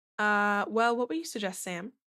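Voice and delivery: ordinary delivery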